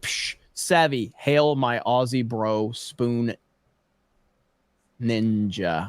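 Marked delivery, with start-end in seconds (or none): 1.2-5.9 very slow, careful, word-by-word delivery. Reading out a donor's message, said slowly. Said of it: "I had to say that one slow".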